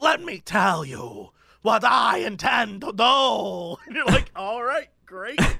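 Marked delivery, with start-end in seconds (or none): 0.0-3.8 overacted villain voice at a slower pace. Recapping a movie, the speaker mimics Adrien Brody's villain: Adrien Brody overacting villain. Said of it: "he's super overacting".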